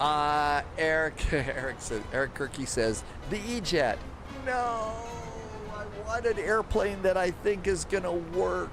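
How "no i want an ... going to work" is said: put-on, exaggerated, extremely whiny high voice. Quoting what Eric Kirky said about an airplane, mock-whiny Eric Kirky voice. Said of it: "He said in the whiniest voice he possibly could".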